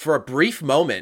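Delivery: high, loud, excited delivery.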